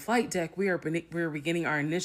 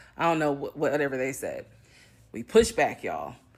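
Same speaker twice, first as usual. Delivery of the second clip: usual speaking voice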